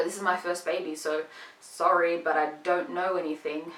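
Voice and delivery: ordinary talk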